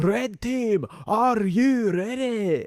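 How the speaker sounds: very high, very slow Scottish game-show announcer voice. Showing how a TV show's Scottish announcer would call the teams, Gladiators Scottish announcer impression. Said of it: "which had a Scottish announcer".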